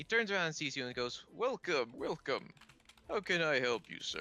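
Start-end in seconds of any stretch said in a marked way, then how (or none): 1.3-4.2 put-on swooping voice of an old shopkeeper gentleman. At the rune store, a gentleman turns and greets a customer, in an older gentleman voice. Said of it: "you see an older gentleman with a monocle".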